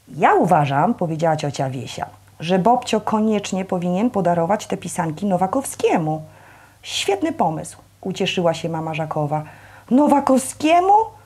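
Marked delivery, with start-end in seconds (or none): 9.9-11.0 offended, taken aback, pitched up. Narrator voicing Bobcio reacting to his aunt Wiesia's suggestion; offended. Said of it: "Obraził się Bobcio".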